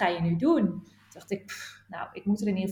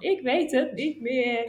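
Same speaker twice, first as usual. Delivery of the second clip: slow, dragged out, speaking through tears; 4 semitones higher than usual. Retelling a tearful phone call to a friend, imitating own past self in tears. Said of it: "gebeld in tranen van".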